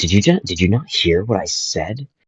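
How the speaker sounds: put-on indignant, petulant little-kid tone. Imitating people arguing like little kids, in mock childish indignation. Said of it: "their tone of voice is, ah".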